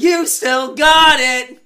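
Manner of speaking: shrill, very loud, very high, stretched-out scream. Retelling how a man screamed so nobody could get a word in: retelling a scream. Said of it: "he screamed it so nobody could get another word in".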